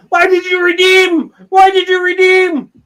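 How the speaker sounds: very high, loud, shrill, full-throated, vocal-cord-shredding scream. Retelling a video of the angriest scammer ever, imitating a scammer screaming. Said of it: "And the guy screaming".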